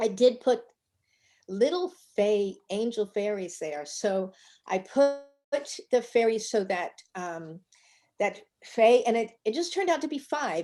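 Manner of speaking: choked-up, emotional voice catching. Showing a piece they just finished, with fairies placed for Faye, getting choked up. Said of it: "I'm getting choked up here".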